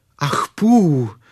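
sudden, loud exclaimed cry. Narrator reads a boy calling out for a missing companion, exclaiming. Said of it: "zvolal Krištůfek Robin".

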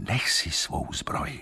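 hushed whisper. Before the king's leap against the warrior woman, the man urging him whispers. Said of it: "zašeptal Liderich".

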